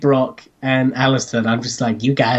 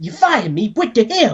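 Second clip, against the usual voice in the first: put-on cartoon character voice, pitched higher; 10 semitones higher than usual. Retelling a scene from the episode in an Eddie Brock impression. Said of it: "Eddie Brock also goes full my impersonation of him".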